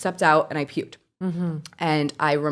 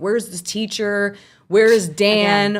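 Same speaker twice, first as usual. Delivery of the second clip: mock-screaming, imitated scream; 3 semitones higher, 6 dB louder than usual. Retelling a trauma story, the moment someone opened the door: imitating someone screaming. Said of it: "opens the door and screams like".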